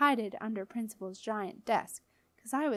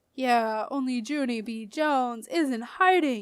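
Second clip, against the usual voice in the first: loud, spooky, menacing, scary voice; 5 dB louder than usual. Hiding from the principal, the narrator answers in a scary voice. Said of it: "I said in a scary voice".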